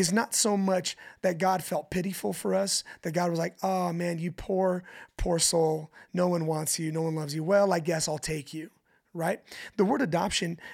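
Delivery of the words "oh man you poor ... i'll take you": plain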